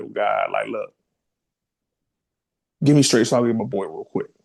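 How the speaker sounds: mock pleading through tears, tearful crying voice. Retelling a prayer to God while crying: retelling a tearful plea. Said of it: "I just started crying".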